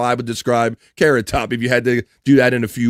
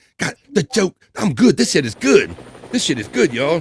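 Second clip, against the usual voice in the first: pleased-with-himself, self-admiring, boastful tone; 4 semitones higher than usual. Imitating someone practicing jokes in front of a mirror: imitating Corey admiring himself. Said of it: "He's just sitting there going".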